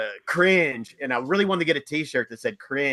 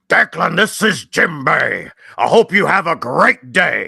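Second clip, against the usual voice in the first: loud, rough character voice; 2 semitones higher, 8 dB louder than usual. Recording a personalized phone greeting for someone named Declan: Jinbei character voice. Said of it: "could you say hello in your Jinbei voice".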